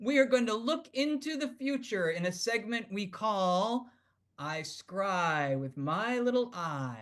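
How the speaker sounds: very slow, deliberate, with scry drawn out. Host announcing a segment name so the producer can cue a sound, very slowly. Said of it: "I'm going to say this really slowly".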